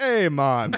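broad, very loud, thick put-on Jamaican accent. Quoting a character's greeting, in a thick Jamaican accent. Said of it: "They gave him a thick Jamaican accent".

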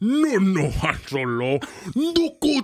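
put-on alien creature voice. Showing how your own Jabba the Hutt impression goes when asked. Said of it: "Do you have a Jabba the Hutt impression? Mine goes like this".

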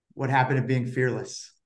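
fast, utterly flat, expressionless deadpan delivery. Quoting the reply he got after complaining about injuries, retelling a deadpan line. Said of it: "with sort of just complete deadpan".

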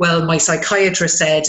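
ordinary talk

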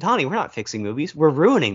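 plain

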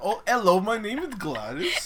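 put-on accent drifting Indian. Asked to say one line in an accent: bad put-on accent sounding Indian. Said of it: "I think it's some IT Indian dude came out".

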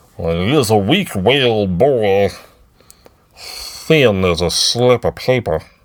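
very slow, deliberate, drawn-out put-on voice. Showing how the impersonation of Brendol Hux went last week: Brendol Hux impression. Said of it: "my impersonation of Brendel Hux".

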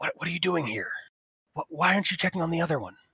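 hushed clicking creature voice. Retelling what a creature said to them: hushed clicking creature voice. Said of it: "talking in a very hushed clicking sound".

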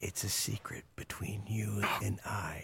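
creepy whispering. Imitating how a man sounds when he whispers a secret to a kid, creepy whisper. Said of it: "That whispering is so creepy".

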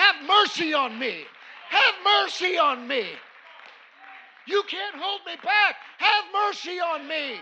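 loud, desperate, pleading crying out, rising in pitch. Retelling a blind man pleading against the crowd: acting out crying out for mercy. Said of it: "He's crying out and he's making a scene".

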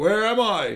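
high-pitched, loud shout. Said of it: "he starts shouting".

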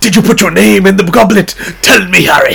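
loud, raspy, high, demanding yell. Imitating a film character demanding an answer: imitating Dumbledore shouting. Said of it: "Dumbledore gets, like, really".

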